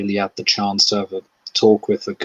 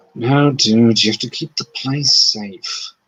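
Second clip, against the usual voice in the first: quiet, low, muttered aside; 2 semitones higher than usual. Voicing Marcus during a story scene; muttering to himself. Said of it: "just sort of muttering like".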